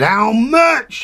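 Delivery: loud, booming, very high voice. Acting out the speaker's mum in a music room, booming voice. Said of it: "a bloody booming voice".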